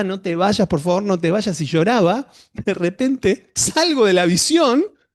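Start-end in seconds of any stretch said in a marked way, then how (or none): none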